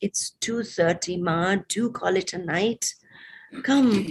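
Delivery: plain reading voice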